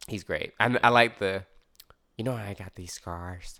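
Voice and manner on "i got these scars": low, slow, drawn-out creepy voice. Talking about the Joker, the speaker breaks into a Joker impression. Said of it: "that voice was on point".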